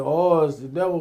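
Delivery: plain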